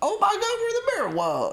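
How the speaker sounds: put-on shrill, very high, swooping sing-song mockery. Retelling a film scene where one character mocks another, retold mocking tone. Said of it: "somebody takes the piss".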